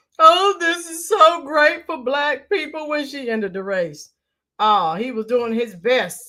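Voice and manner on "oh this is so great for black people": tearful, high, fake crying voice. Retelling a commentator's reaction when she ended the race: mock crying, imitating Bakari Sellers. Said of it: "He was crying all over the place".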